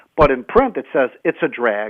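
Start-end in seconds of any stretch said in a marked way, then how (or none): 1.3-1.9 nonchalant, cold, flat deadpan, no feeling. Showing how the quote reads in print: imitating a cold reading. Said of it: "and it sounds cold".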